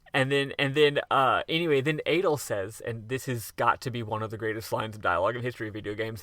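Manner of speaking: ordinary delivery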